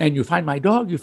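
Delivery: put-on thick Chinese accent in English. Retelling a woman calling back about a microchipped dog, thick chinese english accent. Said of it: "she has a very thick Chinese English accent".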